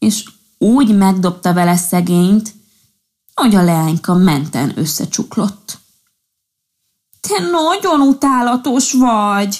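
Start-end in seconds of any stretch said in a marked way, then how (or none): 7.2-9.6 high, drawn-out, furious shout, almost sobbing. A fairy, knocked down by a thrown pinecone, yells at the prankster: angry shout, almost crying. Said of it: "Kiáltott rá a tündér dühösen, majdnem sírva".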